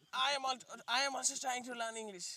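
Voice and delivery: put-on American accent, put on. Imitating another speaker's English line: imitating an American-sounding accent. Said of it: "আমেরিকানের মতো কইতাছে না?".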